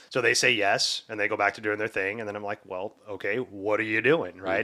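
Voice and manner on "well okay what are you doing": mock irritated tone. Retelling asking the kids again what they are doing: retelling own irritated tone. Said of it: "then I get that tone to my voice".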